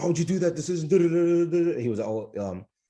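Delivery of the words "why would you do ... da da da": mock high, berating chewing-out yell. Retelling how an ICU attending yelled at him: imitating a yelling attending. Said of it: "He would just start yelling at me, like".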